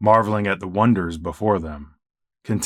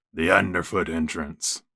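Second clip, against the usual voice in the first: rough, low, gruff mocking voice; 4 semitones lower, 5 dB quieter than usual. Fletch adds a remark to Fate, gruff, mocking voice. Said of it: "in a gruff, mocking voice he added".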